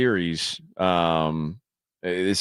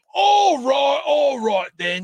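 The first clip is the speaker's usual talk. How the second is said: very high London Cockney accent; 3 dB louder than usual. Showing the british accent he says he can do; cockney accent. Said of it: "not Cockney accents".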